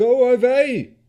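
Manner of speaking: very high, very loud strained male shout. Narrator voicing a man inside the shop answering a knock, strained man's voice. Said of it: "the strained voice of a man said from within".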